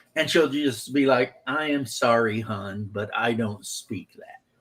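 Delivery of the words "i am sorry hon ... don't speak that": slow, sweet Southern lady's drawl. Retelling how mom answers strangers, imitating a sweet southern lady. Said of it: "she is a sweet Southern lady".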